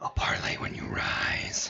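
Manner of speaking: very quiet, breathy, barely audible whisper. Voicing an enemy after an attack in a game: very quiet voice. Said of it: "very quiet".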